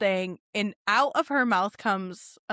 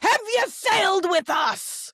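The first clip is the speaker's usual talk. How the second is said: shrill, very high acted hostess bellow, pirate-host style; 10 semitones higher than usual. Complaining that everyone yells, retelling the woman's yell after calling their party name. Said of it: "stop yelling".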